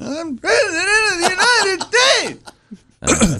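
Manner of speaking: very high-pitched, very slow, grand, stately declaring tone. Showing an impression of an actor playing a president: Daniel Day-Lewis as Abraham Lincoln. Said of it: "one of my best impressions, Daniel Day-Lewis as Abraham Lincoln".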